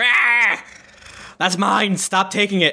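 slow, pained, hurt monster cry. Voicing a hurt creature that hates the damage: monster yelling in pain. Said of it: "He hates it. He goes".

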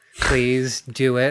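put-on begging dog voice. Acting out a dog with both paws together: imitating a pleading dog. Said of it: "both paws together, like".

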